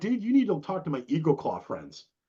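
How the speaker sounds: ordinary delivery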